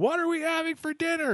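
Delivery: play-acted, very high, shrill, shrieked scream. Telling a joke, the speaker acts out a husband screaming his question at his wife. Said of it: "goes closer and screams".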